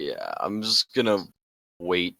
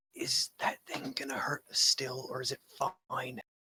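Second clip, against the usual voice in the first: whispered, in character; 7 semitones higher, 9 dB quieter than usual. Whispering to another character in a game about a bear near the still: whispering in character. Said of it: "whisper to him".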